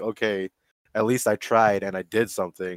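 ordinary talk

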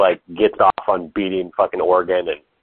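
normal talking voice

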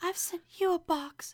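mock, very high whisper voice. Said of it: "you mean whisper voice?".

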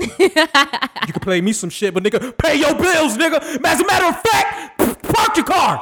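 put-on angry dad voice, slow and rising. Imitating a father scolding about unpaid phone bills: imitating angry dad. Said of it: "he gonna look at me like".

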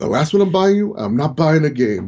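put-on really strong, heavy, laid-on thick Spanish accent. Retelling a Toys R Us argument, imitating Armando's thick Spanish accent. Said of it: "Imagine this in a really strong, thick Spanish accent".

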